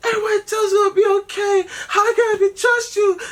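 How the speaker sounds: acted crying, very high-pitched, loud and tearful. Retelling what a crying date said while driving: imitating someone crying. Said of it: "she's crying".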